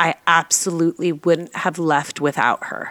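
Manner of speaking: normal talking voice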